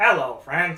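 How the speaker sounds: robotic computer-speech voice. Doing an impression when asked, trying hard to sound robotic: Stephen Hawking computer voice impression. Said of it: "I was trying so hard to be robotic".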